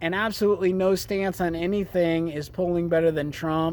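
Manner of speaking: ordinary talk, nothing marked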